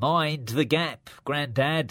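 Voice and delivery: high, nasal, pinched-nose train announcer voice. Narrator with Grandad, doing a nasal underground announcer voice while holding the nose. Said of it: "My underground announcer's voice is a little rusty despite holding my nose".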